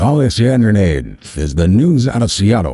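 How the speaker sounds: mock news announcer voice. Reading out a news bit: put-on announcer voice. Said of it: "let me do my announcer voice".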